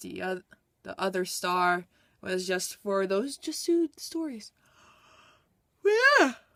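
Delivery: speaking through a yawn. Just woke up, finishing a book review video while yawning. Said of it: "I'm sorry, I'm yawning".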